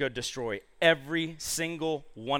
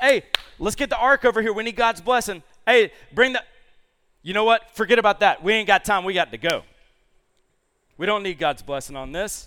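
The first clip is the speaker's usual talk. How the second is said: loud, pitched-up yell; 6 semitones higher, 7 dB louder than usual. Retelling a story, a king calling to a priest: imitating Saul yelling. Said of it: "he yells to the priest".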